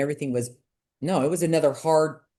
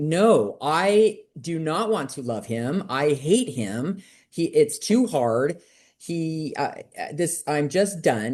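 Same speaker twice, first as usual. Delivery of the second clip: ordinary talk, nothing marked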